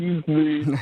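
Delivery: words squeezed out through weird pursed lips. Retelling excusing oneself with a fly in the mouth: imitating talking through weird pursed lips. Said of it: "With these sort of weird pursed lips".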